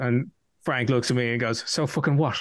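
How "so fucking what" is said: put-on New York accent. Retelling meeting someone at Comic Con: imitating Frank's New York accent. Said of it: "he has that proper New York accent".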